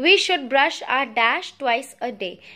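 normal talking voice

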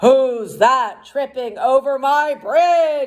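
big, roaring storybook troll monster voice. Reading a story aloud, the narrator voices the troll: roaring troll voice. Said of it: "Roared the troll".

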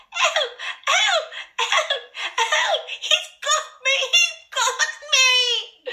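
very high, shrill, wailing, drawn-out terrified screaming. Narrator voicing the youngest as he falls headlong, shrill scream of terror. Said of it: "uttered a shrill scream of terror".

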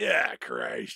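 creepy, low-pitched villain voice.

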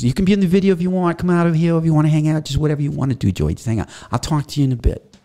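put-on fast New Jersey accent. Quoting what a man told him, in a Jersey accent. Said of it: "he's kind of got a Jersey accent".

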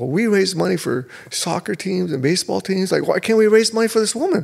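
acted upset. Retelling his wife's reply after he refused, imitating upset wife. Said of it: "she got really upset with me".

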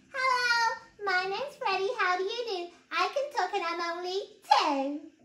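high squeaky voice like a toy. [name] holds up his teddy and talks for it: squeaky Freddy teddy voice. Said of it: "He held up his teddy and squeaked".

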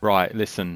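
attempted British accent. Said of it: "At least try".

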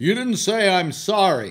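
loud, drawn-out yell. Retelling tapping a man's cart, imitating him yelling from behind. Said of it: "this guy starts yelling behind me".

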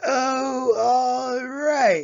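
shouting loudly, pitched high. Roy answers Jarvis, who asks to keep him company, shouting. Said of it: "shouted Roy".

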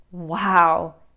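gasping. The boy reacts to John's talk of a foot-long worm, gasped. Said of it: "The boy gasped".

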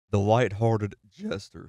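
cracking voice. Narrating the introduction of a character, voice cracks. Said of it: "You hear that voice crack just now?".

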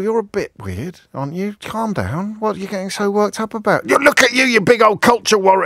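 easy, calm, dismissive, unbothered tone. Acting out an analogy, answering a furious screamer: calmly unbothered reply to screaming. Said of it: "and you just sort of go".

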